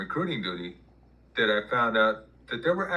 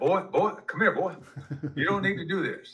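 pitched-up blustering Southern drawl; 7 semitones higher than usual. Recalling being called into the office, the speaker quotes them in a Foghorn Leghorn voice. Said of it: "like foghorn leghorn".

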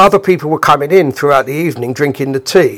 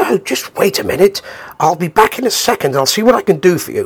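affected, put-on posh accent; 4 semitones higher than usual. Retelling how a man answered a request, in an affected posh accent. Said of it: "he's affected a posh accent".

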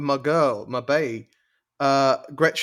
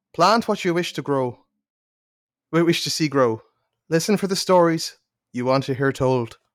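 Northern Irish accent, put on for fun. After spinning the wheel, reading the lines in a northern irish accent. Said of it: "I'm gonna go Northern Irish".

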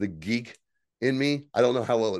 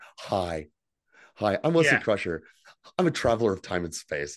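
infomercial-style sales pitch voice; 4 semitones lower than usual. Discussing how a character was written off, imitating Wesley Crusher like an infomercial. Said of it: "it almost sounds like an infomercial".

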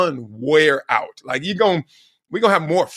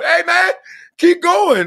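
put-on yell, much higher and louder; 13 semitones higher, 5 dB louder than usual. Coach retelling what he calls out to a kid on the court, imitating a yell. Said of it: "I'm yelling to him".

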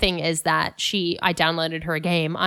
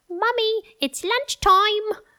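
put-on little child's British accent, higher. Imitating a young daughter who picked up Peppa Pig talk: imitating a child's little British accent. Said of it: "she has occasionally a little British accent".

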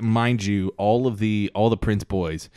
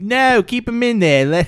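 bad fake British accent, very high, shrill and loud; 8 dB louder than usual. Imagining the mom's words to the doctor: bad British accent. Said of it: "Why does it sound Australian?".

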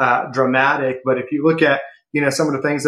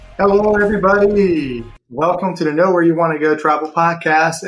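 audible excitement, excited host-style voice; 4 semitones higher than usual. Podcast host welcoming listeners at the start of the episode, sounding excited. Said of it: "sense some excitement in my voice".

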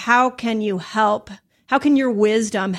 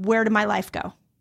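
put-on crying voice; 4 dB quieter than usual. Retelling sitting on the couch one day: retelling crying. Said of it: "sitting on my couch crying, going".

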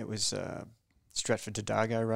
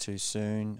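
ordinary delivery

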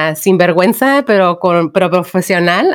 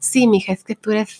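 put-on lisp, quieter and slower; 2 semitones higher, 5 dB quieter than usual. Talking about lisps, the speaker acts out their mom: imitating mom's lisp. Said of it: "My mom has the occasional lisp".

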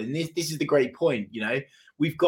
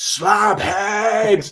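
all-out shrill scream, drawn out; 8 semitones higher, 7 dB louder than usual. Retelling the other speaker's scream from the director's box: imitating someone screaming. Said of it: "to scream at the top of your voice".

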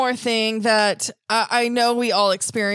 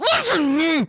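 put-on angry, hissing whisper, higher; 5 semitones higher than usual. Retelling how a parent scolded close to the ear: imitating an angry whisper-hiss. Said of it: "grab my earlobe and pull it close and just be like".

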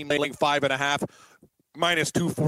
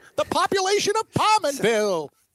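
very high sports call with big pitch swoops; 13 semitones higher than usual. Doing a hockey announcer's call for the other speaker: Rick Jeanneret voice. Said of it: "Rick Jeanneret?".

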